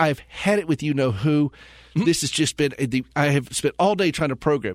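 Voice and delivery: ordinary delivery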